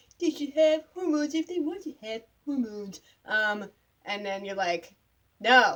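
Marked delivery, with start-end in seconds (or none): 0.2-3.0 high, pitched-up cartoon kid voice. Recounting an argument, quoting the other person in the Timmy voice from South Park. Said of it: "I suddenly have the Timmy voice".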